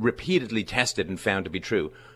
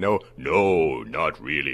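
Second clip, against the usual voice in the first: deep, very slow, low and drawn-out delivery; 5 semitones lower than usual. Retelling the Socrates story, answering as the oracle: booming Oracle at Delphi voice. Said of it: "In a big booming voice".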